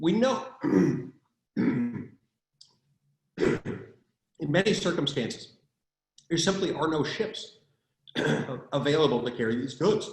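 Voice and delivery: voice briefly dropping away, giving out for a moment. Speaker discussing Jones Act waivers, voice briefly giving out. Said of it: "I just lost my voice momentarily".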